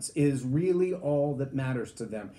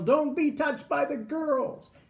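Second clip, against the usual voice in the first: mock young boy voice, very high yelling; 11 semitones higher than usual. Recalling a boy who ran from his little sisters, retelling his yell. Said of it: "and he would yell".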